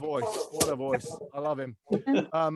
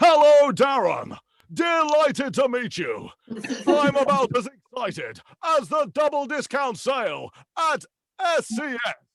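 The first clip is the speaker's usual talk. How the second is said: grand, booming announcer voice, very high, drawn out; 10 semitones higher, 6 dB louder than usual. Picturing being greeted at a party by the X Factor announcer: X Factor announcer voice. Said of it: "I had visions of him sort of saying".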